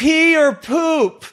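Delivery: put-on very high, piercing screaming shout. Retelling a friend calling out in a busy airport: imitating a friend screaming. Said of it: "She'd be screaming".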